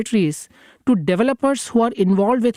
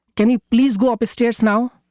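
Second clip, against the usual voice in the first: raised voice, higher; 3 semitones higher than usual. Retelling asking Sumay again to go upstairs after no response, retelling a raised voice. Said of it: "I raise my voice and ask".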